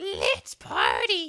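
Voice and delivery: toad voice, very high, loud and shrill. Voicing the character Hestu asking for help: Hestu toad voice. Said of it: "I actually can't do that voice".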